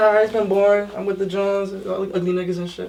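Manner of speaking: normal talking voice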